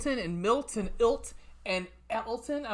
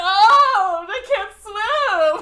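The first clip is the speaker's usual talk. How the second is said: mock dramatic tone, higher and louder; 12 semitones higher, 14 dB louder than usual. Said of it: "it was so dramatic".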